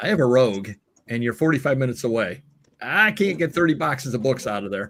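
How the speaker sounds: ordinary talk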